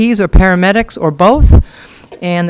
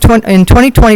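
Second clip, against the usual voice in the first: louder, projected to fill the room. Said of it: "could you speak a little louder?".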